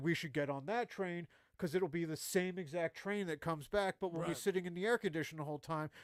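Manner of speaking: plain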